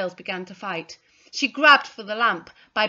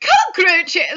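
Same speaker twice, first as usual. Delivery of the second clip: shrill, very high, very loud shriek; 9 semitones higher, 8 dB louder than usual. Mrs. Carter spots beetles that narrowly miss her foot, shrieked. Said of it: "shrieked Mrs. Carter".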